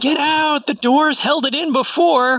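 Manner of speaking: very high, shrill, high-pitched yell. A player's character steps beside a door to slam it shut, yelling. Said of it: "and I'm yelling".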